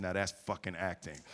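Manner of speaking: acted-out whisper. Act out what he said in your ear after your performance in the scene, retelling a whisper. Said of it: "whispers in my ear".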